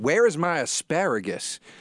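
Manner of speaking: put-on toned-down accent, slow. Retelling what the waitress asked while putting the steak down, in a put-on accent. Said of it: "Where was that accent?".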